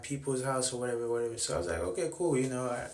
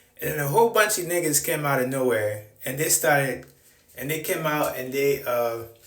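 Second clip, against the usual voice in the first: ordinary delivery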